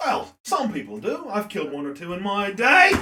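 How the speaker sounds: put-on Australian-Irish accent, wandering between both. Voicing a character in a tabletop game, answering a player's question; put-on australian, irish accent. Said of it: "[name] taking a look at you. He sees your axe. He goes, "That's not a knife." / [name] taking a look at you. He sees your axe. / Australian, Irish. / that's me, [name]".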